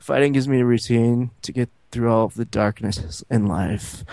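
low, flat, unvarying monotone drone. Recapping a fight show, quoting a bipolar contestant's line: low monotone voice. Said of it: "He says in a low monotone voice".

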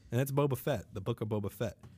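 usual speaking voice

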